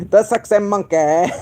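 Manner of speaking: slight British accent. Repeating the name of someone sending questions, with a slight British accent. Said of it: "get a little British accent when I say that".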